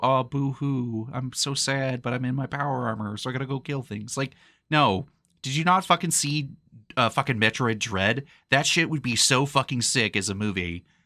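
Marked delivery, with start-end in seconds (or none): 0.0-4.2 put-on, sad, mopey, whiny boo-hoo voice. Mocking how a movie might woobify Samus: mock sad woobified Samus. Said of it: "woobify fucking Samus and make her go".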